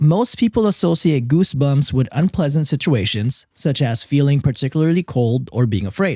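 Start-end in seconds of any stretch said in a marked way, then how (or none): none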